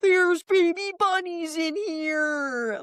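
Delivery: acted high scream in slow motion, drawn out. Describing a TV reenactment where a woman finds baby bunnies, imitating someone screaming. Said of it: "like screaming".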